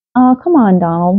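coaxing, pleading, begging tone. Minnie urges Donald to come along on the balloon ride, pleading. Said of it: "Minnie pleaded".

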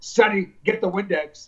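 put-on very strong Greek accent. Quoting his dad calling to him at the diner, in a strong greek accent. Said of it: "with a very strong Greek accent".

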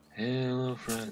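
mocking, put-on unexcited, bored delivery. Mimicking a game character's greeting, imitating an unexcited voice. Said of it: "Like he's not excited for anything in life".

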